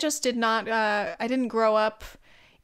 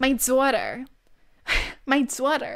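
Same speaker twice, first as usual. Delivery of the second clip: put-on Long Island accent; 2 semitones higher than usual. Imitating how a Long Island mom sounds: Long Island mom accent. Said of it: "what a Long Island mom sounds like".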